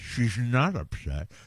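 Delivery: mock speech as if something is in mouth. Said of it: "even with the thing in my mouth".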